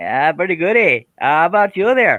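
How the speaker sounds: bad put-on Canadian accent. Greeting the others as the show's guests are introduced, in a bad Canadian accent. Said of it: "I'm not a good Canadian accent guy".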